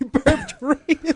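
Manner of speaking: high, slow laughing.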